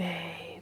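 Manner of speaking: very quiet whisper, barely above breath. Retelling how a partner came inside and called out: imitating someone whispering. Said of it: "he's, like, whispering".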